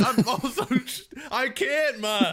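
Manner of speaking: high, loud, desperate pleading.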